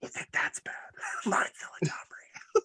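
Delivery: hushed, whispered aside. Telling everyone their own middle name: whispered. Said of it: "Which I'll just whisper".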